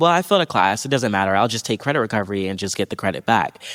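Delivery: ordinary delivery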